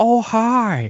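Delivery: very high-pitched film-star style voice. Doing an impression of Owen Wilson as a radio DJ: Owen Wilson voice. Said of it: "Owen Wilson".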